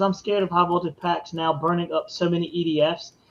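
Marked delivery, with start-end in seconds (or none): none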